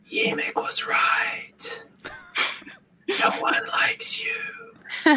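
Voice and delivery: barely there, slow, drawn-out whisper. Voicing words that creep in as a faint whisper: faint whisper. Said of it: "a faint whisper".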